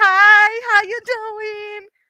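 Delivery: mock very high, very slow, drawn-out super-friendly tone. Retelling greeting people in New York: imitating own super friendly greeting. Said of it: "'cause I be super friendly".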